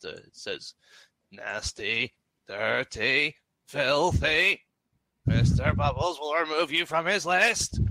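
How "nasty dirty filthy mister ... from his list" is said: menacing, sinister mechanical robot voice. Game narrator voicing a second voice from around a corridor bend, mechanical, sinister voice. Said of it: "A second voice sounds more mechanical and sinister".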